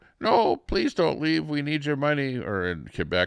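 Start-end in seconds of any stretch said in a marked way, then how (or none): 0.2-2.4 high-pitched, pleading, begging voice. Imitating people in Ontario asking Alberta not to leave: mock pleading. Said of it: "over there in Ontario and you're going".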